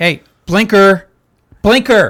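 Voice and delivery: very loud, high, sarcastic, nagging yell. Voicing a car's internal system that yells at the driver: yelling loud enough to clip. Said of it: "That's definitely going to clip".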